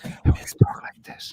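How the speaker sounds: soft whisper. Announcing a slower, whispered delivery for the asmr people: whispering. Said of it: "we're gonna whisper into the microphone".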